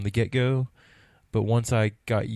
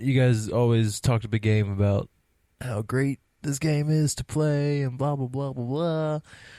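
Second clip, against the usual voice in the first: playful, teasing put-on voice; 3 semitones higher than usual. Describing the game's hype to the others, imitating Sam. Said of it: "That was my Sam impersonation".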